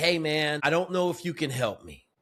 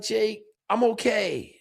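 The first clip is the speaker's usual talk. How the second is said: put-on crying voice, much slower; 7 semitones higher than usual. Retelling a phone call to a friend, acting out the young man on the line, imitating someone crying. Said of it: "he's crying".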